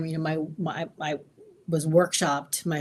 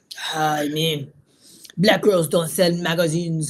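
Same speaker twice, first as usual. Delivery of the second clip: loud put-on Italian accent; 6 dB louder than usual. Retelling what your italian boss at a fashion magazine told you, in a put-on italian accent. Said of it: "With the accent".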